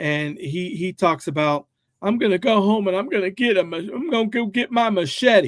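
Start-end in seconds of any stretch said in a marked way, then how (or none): 2.0-5.5 put-on play-acted tearful child voice, high and sobbing. Retelling what a kid said after being tackled: imitating a crying kid. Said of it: "he hops up and he's crying".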